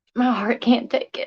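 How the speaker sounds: tearful, half-whispered crying. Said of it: "I'm sorry for crying up here".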